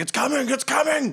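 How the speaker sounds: very high, frantic, panicked shouted yell. Voicing people who run through a camp: panicked yelling. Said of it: "people running and yelling to each other".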